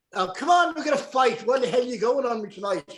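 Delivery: put-on Irish brogue accent throughout. Asked how a man sounded, the speaker imitates him: irish brogue impression. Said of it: "let's hear a little bit, [name]. ... How did he sound?".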